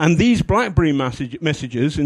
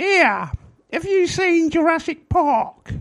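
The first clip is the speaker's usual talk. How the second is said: put-on shrill, high eight-year-old girl voice. Quoting her asking the speaker a question, imitating exactly how she talks. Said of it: "And she talks like this".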